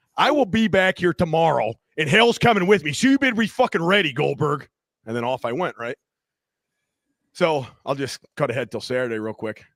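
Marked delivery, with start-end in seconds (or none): 0.2-4.7 loud, high, shouted yell. Speaker re-enacts yelling at a stranger while walking around a corner: retelling own yelling. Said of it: "still yelling at him".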